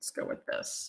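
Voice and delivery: whispered, as if to oneself.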